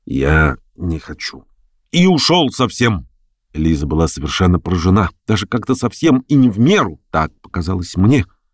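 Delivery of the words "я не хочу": low, quiet mumbling under the breath. A man, after staring intently at a woman, answers her, muttered quietly. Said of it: "пробормотал он тихо".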